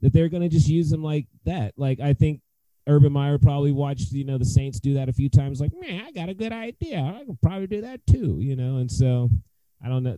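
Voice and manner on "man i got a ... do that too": soft, higher, deliberately bad cranky-coach voice. Imagine Urban Meyer's reaction after watching the Saints, in a terrible Urban Meyer impression. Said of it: "probably the worst Urban Meyer impression".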